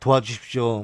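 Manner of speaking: solemn, low, hushed, grave ad narrator voice. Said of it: "목소리 깔면서".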